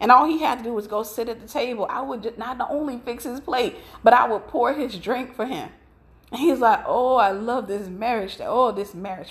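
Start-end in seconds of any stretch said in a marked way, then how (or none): 6.9-9.3 put-on foreign accent, laid on thick, savoring. Retelling what a spouse said when the speaker fixed his plate, fake non-american accent. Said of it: "I'm doing a fake accent because he was not American".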